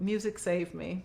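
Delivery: ordinary talk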